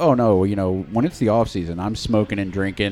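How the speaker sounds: normal talking voice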